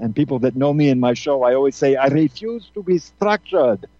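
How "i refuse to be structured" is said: slow, deliberate Austrian accent. Quoting a saying the way a grandmother would: Austrian accent. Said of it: "like my grandmother would say in, in, with the Austrian accent".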